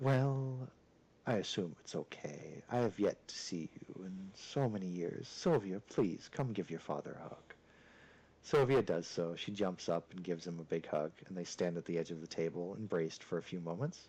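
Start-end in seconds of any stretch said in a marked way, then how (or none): 0.0-7.5 very deep, smooth, velvety, suave voice. Voicing the robed father descending the stairs: very deep and suave voice. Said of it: "in a very deep and suave voice".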